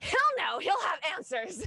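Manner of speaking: very high, loud, fired-up angry outburst. Recounting stomping off toward someone, the speaker quotes themself; retelling an angry outburst. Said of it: "start stomping off in the direction".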